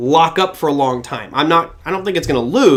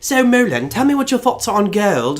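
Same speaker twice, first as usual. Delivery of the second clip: put-on pitched-up Australian accent; 5 semitones higher than usual. Retelling a TV interview question put to the speaker: Amanda Drury Australian accent. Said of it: "with her lovely Australian accent".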